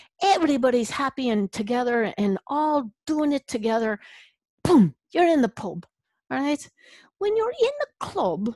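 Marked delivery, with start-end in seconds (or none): 0.2-6.6 put-on Irish accent, laid on thick. Speaker launches into a comic bit in a fake irish accent. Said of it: "you know I'm about to break into my Irish".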